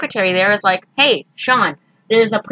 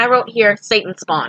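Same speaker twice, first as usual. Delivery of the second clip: normal talking voice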